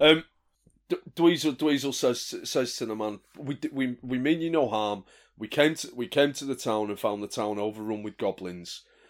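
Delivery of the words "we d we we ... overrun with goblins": plain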